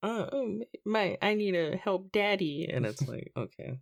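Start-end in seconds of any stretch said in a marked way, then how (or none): 0.0-2.7 put-on cutesy anime girl voice, much higher. Complaining about an English dub, in cutesy anime girl voice. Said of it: "the little anime girl voice of like".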